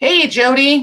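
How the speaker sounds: shouting loudly. Greeting someone by name, yelling loudly. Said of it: "Pardon my need to yell".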